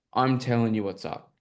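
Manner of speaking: plain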